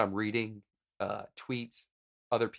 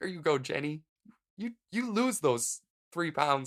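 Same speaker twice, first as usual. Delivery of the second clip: put-on lump in the throat; 6 semitones higher than usual. Recalling watching the show in college, acting mock choked up. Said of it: "lump in the throat".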